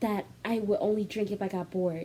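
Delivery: soft, hushed half-whisper under the breath. Retelling how a woman on the couch drinking half-whispered: imitating Ariana half-whispering. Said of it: "pause for five whole minutes as she's whispering".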